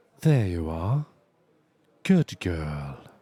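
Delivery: smooth, very low-pitched voice. Streamer tries out a voice for chat, in an Astarion voice. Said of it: "smooth voice".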